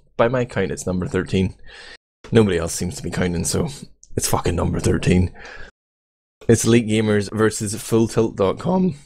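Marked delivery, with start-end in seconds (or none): 6.5-9.0 voice cracking, slower. Commentating a gaming tournament final, announcing the matchup, voice cracking. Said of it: "the voice is going. Voice crack!".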